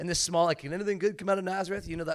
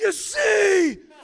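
very high, loud yell, see stretched out; 11 dB louder than usual. Retelling how a man with worship music playing from his vehicle yelled, retelling a yell. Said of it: "he yells".

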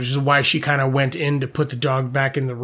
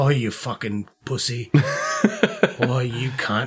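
put-on Scottish accent, dragged out very slow; 2 semitones lower than usual. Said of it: "now you can picture him Scottish".

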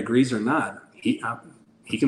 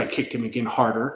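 ordinary talk, nothing marked

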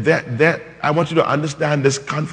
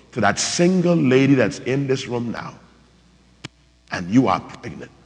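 slow, deliberate, each word laid down slowly. Repeating himself to a listener in the room, talking slowly. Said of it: "Let me talk slow".

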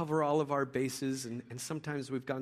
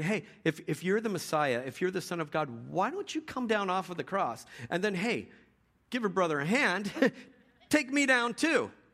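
scornful, goading jeer, swooping and pitched up; 5 semitones higher, 4 dB louder than usual. Retelling a Bible story, voicing the thief on the cross: imitating a mocking thief. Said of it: "He starts mocking him and saying".

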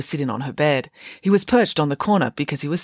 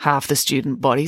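plain

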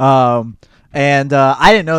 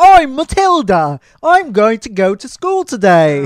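exaggerated, thick, higher-pitched, sing-song Cockney accent; 8 semitones higher than usual. Mocking a school play's terrible British accents, the speaker does an exaggerated Cockney Matilda. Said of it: "the most Cockney British ever".

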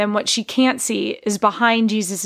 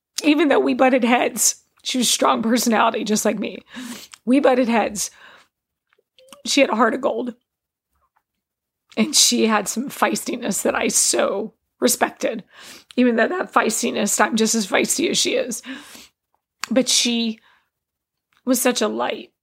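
tearful speech, crying while talking; 2 semitones higher than usual. Remembering a woman she misses, crying while talking. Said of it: "And I'm crying because I miss her".

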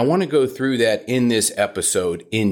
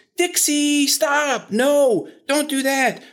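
very high-pitched, drawn-out scolding voice. Imitating puppy owners scolding their dog, high-pitched owner voice. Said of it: "the owners are having this high-pitched voice".

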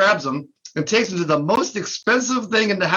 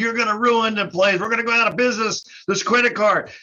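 agitated, ranting, yelling complaint; 2 semitones higher than usual. Retelling how Bob came in over a chargeback, imitating Bob yelling and screaming. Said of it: "He comes in yelling and screaming at us".

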